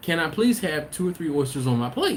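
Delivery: acted courteous, careful, very nice, polite tone. Retelling a child asking a server for oysters: imitating a polite request. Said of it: "He's asking very nicely and politely".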